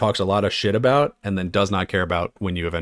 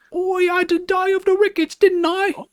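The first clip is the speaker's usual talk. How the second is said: put-on generic ghost boy voice, higher; 3 dB louder than usual. Describing a game's ghost boy character: Winston voice. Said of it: "a little ghost boy who talks like the most generic".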